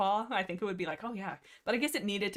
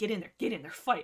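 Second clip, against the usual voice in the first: taunting, goading tone. Retelling a book scene, a cat urging another to fight: imitating someone egging on. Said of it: "Lionheart behind him is egging him on".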